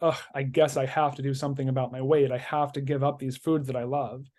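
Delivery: ordinary delivery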